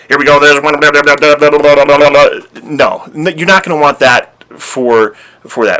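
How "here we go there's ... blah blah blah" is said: loud, fast, one-note monotone auctioneer rattle. Imitating an auctioneer narrating a film: imitating a fast monotone auctioneer. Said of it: "an auctioneer who can rattle off a million words per second? All kind of monotone".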